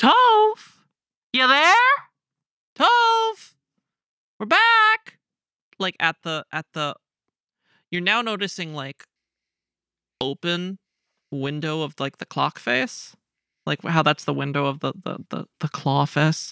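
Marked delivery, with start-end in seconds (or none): 0.0-5.2 very high, stretched, drawn-out calling voice, as if over distance. A character on tiptoes calls across the hump, calling out, hands cupped. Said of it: "hands around her mouth".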